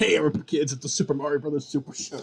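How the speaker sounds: put-on, high, shouted cartoon announcer voice. Recalling recording Five Nights with Stuart, retelling a shout in put-on voice. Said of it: "kept shouting that out in that voice".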